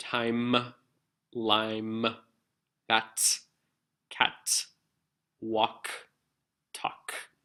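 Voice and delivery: very slow, each syllable carefully enunciated. Showing listeners the syllables in example words, very slow and enunciated. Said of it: "I'm just going to say it really slowly".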